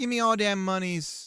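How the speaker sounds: terrible put-on Jamaican accent. Apologizing for the accent, then trying the line again in a terrible Jamaican accent. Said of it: "Sorry for my terrible Jamaican accent".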